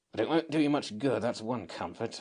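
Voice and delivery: muttering under the breath. Narrator reading the fairy's aside to itself, muttering to itself. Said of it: "it muttered to itself".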